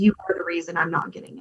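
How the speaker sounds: put-on whisper. Retelling what nurses said to the speaker in the room: imitating a whisper. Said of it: "nurses who would come in and whisper to me".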